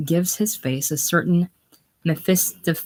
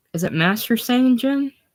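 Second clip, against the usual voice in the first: usual speaking voice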